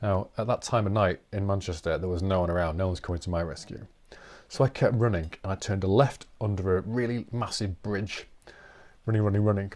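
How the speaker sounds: plain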